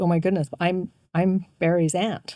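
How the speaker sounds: crying, tearful voice. Retelling what the woman beside them in the pew said: imitating someone crying. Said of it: "she starts crying".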